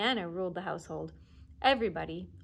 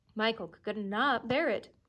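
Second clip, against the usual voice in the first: plain reading voice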